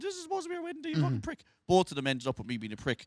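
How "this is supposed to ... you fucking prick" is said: mock angry crying, very high-pitched and hushed. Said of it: "she would start crying and go".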